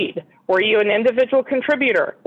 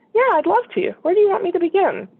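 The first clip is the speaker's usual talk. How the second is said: gentle, easygoing, friendly, smiling, lightly pitched up; 8 semitones higher than usual. Showing how to answer an interviewer's question: soft, relaxed, smiling. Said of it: "say it with a smile and in a really soft and relaxed way".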